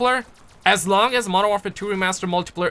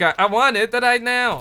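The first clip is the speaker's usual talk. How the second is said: slow, comical put-on Chinese accent; 3 semitones higher than usual. Talking about favorite accents, demonstrating a put-on chinese accent. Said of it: "I love the Chinese accent a lot. When they say like".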